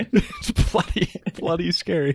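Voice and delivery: high, swooping, emphatic delivery with wide pitch swings. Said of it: "your Jordan Peterson impression".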